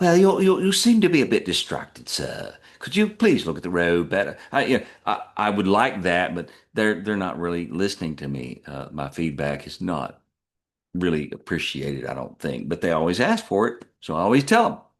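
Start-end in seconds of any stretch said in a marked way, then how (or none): 0.0-4.4 put-on English accent. Complaining about a car's voice programming, the speaker demos it in an english accent. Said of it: "At least give her an English accent".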